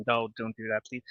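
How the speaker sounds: ordinary delivery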